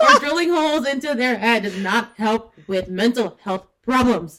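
loud, laughing yell into a microphone. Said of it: "She's yelling straight into the microphone".

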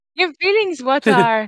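clumsy, botched, put-on little old master voice. Joking after another speaker's failed attempt: Yoda voice. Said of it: "Shows you how good I am at Yoda voice".

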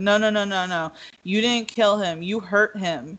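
ordinary delivery

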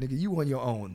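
ordinary talk, nothing marked

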